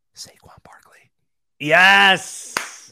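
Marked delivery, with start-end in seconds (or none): 0.1-1.1 whispered, much quieter. Naming a player to the other speaker, whispering. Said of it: "I'm gonna whisper this one".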